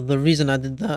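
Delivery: cracking voice. Explaining a game choice to viewers, voice cracking. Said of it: "voice crack".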